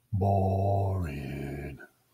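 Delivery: single word mumbled, low and drawn out. Invited on a long walk, the dog is muttering. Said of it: "muttered Bill".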